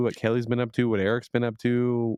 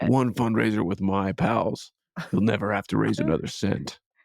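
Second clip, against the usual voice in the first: clumsy, bad put-on rich playboy movie-hero voice. Talking about work fundraisers on a podcast, doing a bad Bruce Wayne impression. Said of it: "That was a bad impression".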